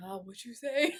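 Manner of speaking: sexy, sultry, seductive delivery. Retelling how someone answers a flirt: imitating a sexy voice. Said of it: "they try to give it back to you in a sexy voice too".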